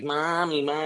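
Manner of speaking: put-on high-pitched little kid's voice. Retelling a nightmare about kids calling out: imitating small kids calling mom. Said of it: "two kids crawling all over my body and going like".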